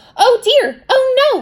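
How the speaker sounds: very high, loud, frightened robot cry. Reading a story aloud, voicing the robot facing the dragon: scared robot. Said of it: "The robot was so scared".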